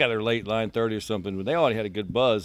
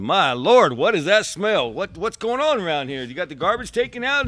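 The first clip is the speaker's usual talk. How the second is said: mock, loud, high, carrying hollering; 9 semitones higher, 5 dB louder than usual. Retelling how a man arrived and complained about a smell: imitating someone hollering. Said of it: "he starts hollering".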